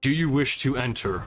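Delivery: scornful, imperious, contemptuous, commanding voice. Narrator voicing one of three voices to the players, contemptuous, commanding voice. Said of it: "The contemptuous, commanding one is the one that I'll be speaking now".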